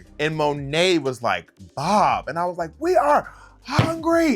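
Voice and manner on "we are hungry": put-on screaming, higher, louder, slower. Retelling a confrontation with a man alongside Monet, imitating your past self screaming. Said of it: "I was like screaming at this man".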